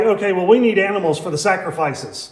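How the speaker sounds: normal talking voice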